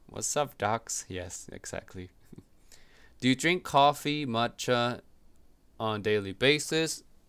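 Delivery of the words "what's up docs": cartoon rabbit character voice. Answering viewer questions, the speaker breaks into a Bugs Bunny voice. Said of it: "Bugs Bunny voice".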